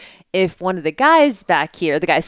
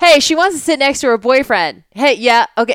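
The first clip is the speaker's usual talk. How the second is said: high-pitched yelling at full volume; 7 semitones higher, 4 dB louder than usual. Retelling how a passenger announced it down the plane: imitating a man yelling. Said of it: "literally yelling down".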